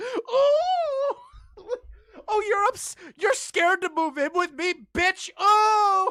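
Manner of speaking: hysterical, very high, loud sobbing, "oh" drawn out. Imitating a boyfriend's voice note: imitating Alex crying hysterically. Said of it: "it's him crying his eyes out".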